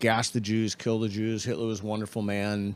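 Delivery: ordinary talk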